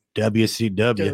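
Southern accent. Showing how they say the letters: southern accent. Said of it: "You gotta say it with a southern accent".

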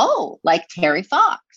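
cheerful, positive voice. Retelling a child's reply on hearing about cancer: imitating a very positive tone. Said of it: "he said it in, like, a, a very, like, positive way".

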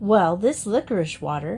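ordinary delivery

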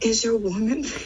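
words breaking up with laughter throughout. Trying to read a question aloud for a game, laughing through the question. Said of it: "You can't even say the question without laughing".

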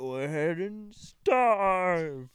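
slow drawn-out starve. Describing how Beast acted at the beginning, the speaker does a Beast impression. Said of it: "That was my Amazing Beast impression".

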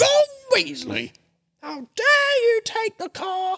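shrill shout, pitched very high and slow. Retelling the Harry Potter letter Missus Weasley sends: shouting as Mrs Weasley. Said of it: "opens up and shouts out".

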